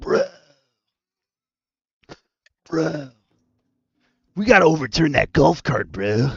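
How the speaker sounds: cartoon character voice in whisper. Imagining a whispering liver talking, whispered Muscle Man voice. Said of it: "the whispering liver whispers in the voice of Muscle Man".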